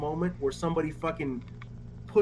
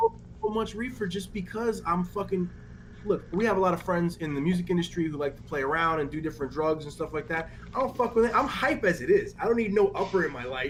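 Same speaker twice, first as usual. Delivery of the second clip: ordinary talk, nothing marked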